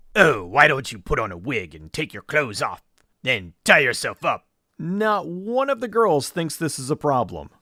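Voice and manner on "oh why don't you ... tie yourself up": sinister, evil villain voice. Quoting the killer from the movie under review: imitating an evil guy voice. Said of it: "He's using the evil guy voice".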